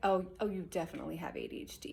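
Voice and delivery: condescending, talking-down tone, faintly accusing. Quoting someone who told them they had ADHD: mock-condescending. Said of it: "She said it in a very condescending way. She said it like".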